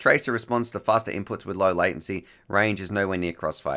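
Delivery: ordinary talk, nothing marked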